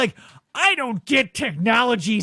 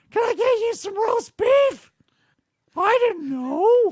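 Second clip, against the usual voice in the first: put-on sick-sounding cartoon mouse voice; 10 semitones higher than usual. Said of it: "sounds like Mickey Mouse getting the third degree".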